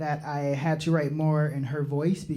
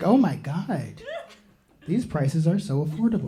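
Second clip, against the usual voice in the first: woman's voice, put on.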